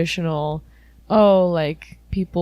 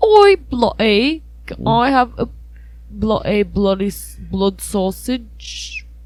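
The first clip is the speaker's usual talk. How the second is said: put-on British accent coming out more Australian; 4 semitones higher than usual. Right after being told not to do accents: put-on british accent sounding australian. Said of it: "You sound Australian more so than British".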